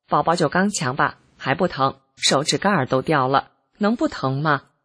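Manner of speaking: ordinary talk, nothing marked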